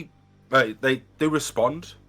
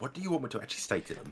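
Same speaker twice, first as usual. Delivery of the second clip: hushed, very quiet whisper; 13 dB quieter than usual. Narrator voicing a character who turns to Oberon, whispering. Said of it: "kind of whispers in Elvish".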